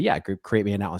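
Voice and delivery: normal talking voice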